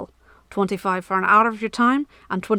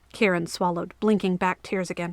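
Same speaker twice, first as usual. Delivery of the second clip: plain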